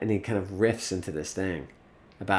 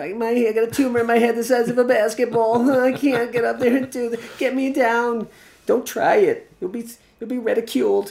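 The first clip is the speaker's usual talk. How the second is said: very high, loud voice, fretful and self-doubting; 8 dB louder than usual. Voicing the doubting voice in your head: Woody Allen voice. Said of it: "I call it the Woody Allen voice".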